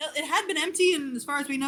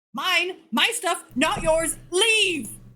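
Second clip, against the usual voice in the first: loud, furious, ghost-like shout; 4 semitones higher, 5 dB louder than usual. Narrating a game scene as a specter confronts intruders in its home: ghost shouting. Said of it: "a Sverfneblin specter appears and starts shouting".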